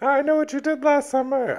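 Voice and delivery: very high, loud, creepy horror-movie voice.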